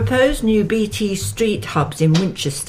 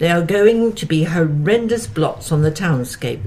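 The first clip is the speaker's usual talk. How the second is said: ordinary delivery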